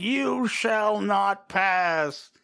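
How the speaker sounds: "pass" stretched out, high and loud. Retelling a comic scene where a character goes full on Gandalf: Gandalf voice. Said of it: "then he goes full on Gandalf".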